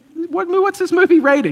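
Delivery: high, loud, shocked and alarmed.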